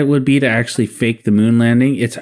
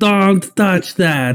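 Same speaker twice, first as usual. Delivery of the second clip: put-on Russian accent, higher pitched; 7 semitones higher than usual. Retelling a scene: imitating the Russian cosmonaut from Armageddon. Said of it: "that Russian, the Russian cosmonaut from, uh, Armageddon".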